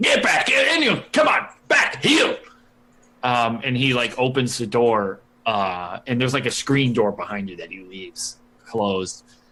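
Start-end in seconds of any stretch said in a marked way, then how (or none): 0.0-2.4 mock very high, loud hollered shouting. Retelling a visit where Vernon shouts at the dogs from inside, imitating Vernon shouting at dogs. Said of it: "shouting at the dogs like".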